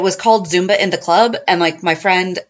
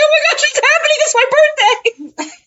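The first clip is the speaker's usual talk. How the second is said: mock, squeaky, high-pitched happy sobbing. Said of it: "happy crying".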